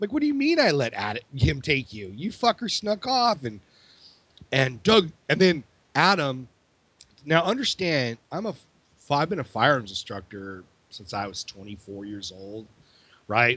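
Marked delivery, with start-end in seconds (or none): 0.1-3.4 furious, angry, high-pitched shouting. Retelling a reply to someone who yelled at them: retelling own angry yell. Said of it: "I'm starting to get ready to yell".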